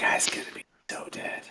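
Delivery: very hushed, slow whisper under the breath. Voicing a character who mutters as a companion leaves: whispering to himself. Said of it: "whispers to himself".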